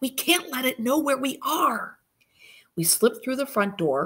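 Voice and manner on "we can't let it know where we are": sharp, high hiss under the breath. The narrator hushes a frightened Marie as they hide, hissed. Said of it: "I hissed".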